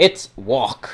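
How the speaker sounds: grand dramatic announcer-style delivery. Presenting a program to ladies and gentlemen, a dramatic announcement. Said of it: "to be all dramatic".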